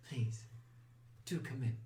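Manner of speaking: hushed, otherworldly, ethereal whispered voice. Game master voices a voice answering the players' knock, in an ethereal voice. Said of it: "you hear an ethereal voice almost answer".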